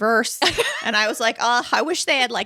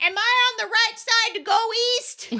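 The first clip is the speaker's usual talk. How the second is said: put-on, very loud, very high-pitched voice; 12 semitones higher than usual. Retelling how an elderly man at a station asked aloud, imitating a man speaking loudly. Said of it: "he just says very loudly".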